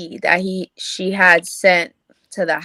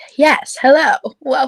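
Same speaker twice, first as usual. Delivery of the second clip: bright, pitched-up, small newscaster voice; 6 semitones higher, 4 dB louder than usual. A speaker demonstrates a kind of code switching, in a little newscaster voice. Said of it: "the little newscaster voice".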